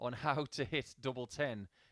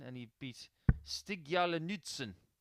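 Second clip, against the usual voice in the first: put-on Norwegian accent. Naming a player's opponent, saying the name in a Norwegian accent. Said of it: "I did that in my best Norwegian accent".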